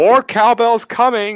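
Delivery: very high-pitched, taunting, jeering yell. In a tabletop game, a player's character shouts at him, a mocking shout. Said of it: "I will shout".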